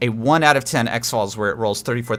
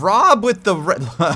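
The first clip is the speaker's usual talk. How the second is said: voice breaking mid-word, jumping high; 8 semitones higher, 3 dB louder than usual. A speaker announcing an incoming raid and greeting Rob, voice cracking. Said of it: "my voice is cracking".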